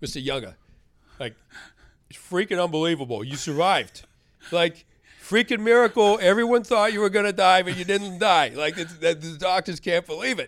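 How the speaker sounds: put-on Boston accent. Retelling what a nurse said when the speaker woke up, imitating a boston accent. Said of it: "She had an awesome Boston accent".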